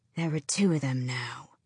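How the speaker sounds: low, strange hissing voice. Narrating a story, voicing one of three creatures coming down a hill, hissing. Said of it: "one hissed".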